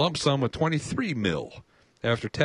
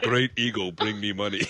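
put-on Indian voice; 2 semitones lower than usual. Reading someone's quotes aloud as a joke, in a stereotyped Indian voice. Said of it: "In an Indian voice?".

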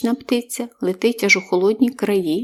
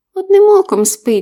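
shrill, very high, very loud mocking tease; 11 semitones higher, 8 dB louder than usual. Answering a companion's question about how a squirrel sleeps in winter: mocking. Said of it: "насмішкувато сказав Павлусь".

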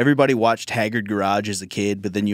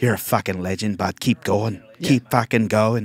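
put-on drunk Irish accent, mock drunk voice. Riffing on someone's story about a man asking for a photo, imitating a drunk irish guy. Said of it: "drunk Irish dude".

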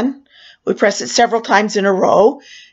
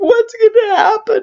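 put-on sobbing panic, very high crying wail; 12 semitones higher than usual. Retelling being stuck with nobody answering the alarm, retelling crying. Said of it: "and I start crying".

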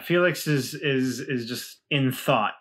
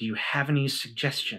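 muttered aside under the breath; 4 dB quieter than usual. Describing a nervous character's aside, muttering under his breath. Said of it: "under his breath".

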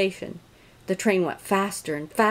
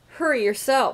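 cheeky, impudent, pitched-up delivery; 5 semitones higher than usual. One engine retorts to another engine that told it to hurry; cheeky. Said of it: "said cheeky Thomas".

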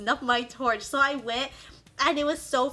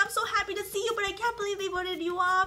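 downcast, sad tone in a higher voice; 8 semitones higher than usual. Retelling arriving among the other players, imitating Reem sounding sad. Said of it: "she was like all sad".

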